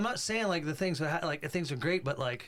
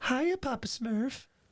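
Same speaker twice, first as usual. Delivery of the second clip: high-pitched put-on cartoon character voice; 8 semitones higher than usual. Showing off an imitation of a cartoon character: Smurfette voice. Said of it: "a good imitation. Here's Smurfette from the Smurfs".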